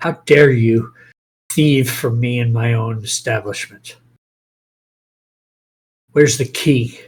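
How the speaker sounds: grumbling mutter throughout. Voicing a character walking beside the escorted prisoner: muttering. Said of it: "the whole time he's muttering you".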